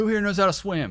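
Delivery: very high, shrill, very loud military-style screamed voice. Retelling army training, speaker acts out the sergeant major addressing the crowd: retelling a scream. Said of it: "he's screaming at everybody".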